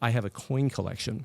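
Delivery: ordinary delivery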